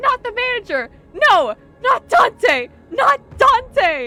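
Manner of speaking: very high, drawn-out screaming. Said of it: "screaming her head off".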